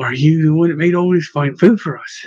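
ordinary delivery

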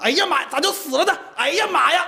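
put-on Northeastern Chinese Dongbei dialect accent. Retelling a worker's exclamation on seeing a sow had died: Northeastern Chinese accent. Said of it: "他当时感叹说东北话".

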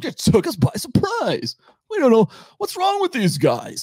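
high, mocking, baffled expert voice.

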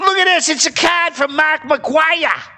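put-on Boston accent, pitched very high. Reading a Mark McGwire card aloud for the others: Boston accent. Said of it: "how do you say this in a Boston accent?".

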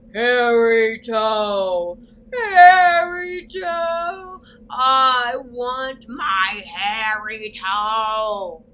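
very loud, very slow, booming, drawn-out thunderous rumbling bellow. Reading a story, a voice from the forest cries out: rumbling low bellowing voice. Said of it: "A rumbling, low voice rolled out from the forest like a thunderstorm, bellowing".

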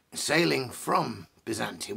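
slow, stressed emphasis on the word "from". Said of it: "emphasis on the word from".

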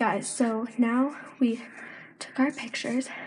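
winded, out of breath, panting between words. Vlogging to viewers just after running back from taking pictures, out of breath. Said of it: "now we're out of breath because we ran".

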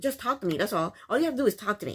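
sassy, full of major attitude. Retelling what Jasmina told Michael: imitating Jasmina's stink attitude. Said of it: "she said it with a really, really stink attitude".

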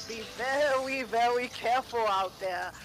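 slow, deliberate, careful, drawn-out cartoon hunter voice. A speaker puts on a voice, then names it: Elmer Fudd voice. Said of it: "That's my Elmer Fudd voice".

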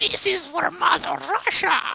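mock, very high, rough, drawn-out yell. Recalling a lady from Russia in an old game, imitating her yelling. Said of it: "Just yelling at".

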